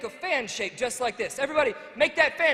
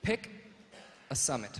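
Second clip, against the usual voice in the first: hushed, very low, quiet whisper; 11 semitones lower, 10 dB quieter than usual. Showing the audience how to say the first step: whispering low. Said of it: "I just want you to whisper real low".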